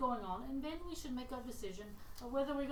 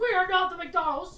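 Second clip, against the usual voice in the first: very loud, high-pitched, put-on Australian accent; 7 semitones higher, 15 dB louder than usual. Imagining the lone viewer reacting, he voices them in an Australian accent. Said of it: "With an Australian accent going".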